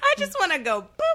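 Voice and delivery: high, laughing, playful, giggly tone.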